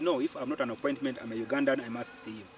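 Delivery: ordinary delivery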